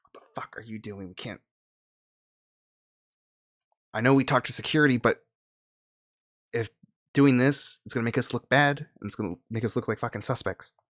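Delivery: irate, angry scolding rant. Voicing a character who glares at a player during a security stop: glaring, angry character line. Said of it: "she glares at you and she's like".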